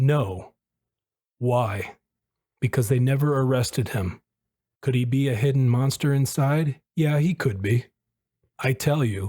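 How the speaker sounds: ordinary talk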